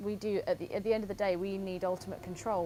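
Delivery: plain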